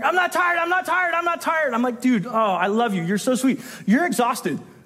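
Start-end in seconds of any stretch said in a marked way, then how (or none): 0.0-1.7 mock children's screaming, higher. A parent retells the kids fighting in the car: imitating kids screaming. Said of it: "they are fighting and screaming".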